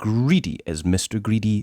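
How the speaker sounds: plain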